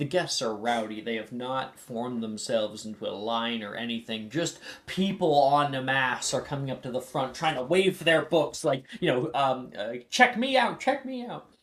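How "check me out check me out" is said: shouting, higher. Voicing rowdy guests waving their books at the desk: yelling. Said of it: ""You don't have to yell,"".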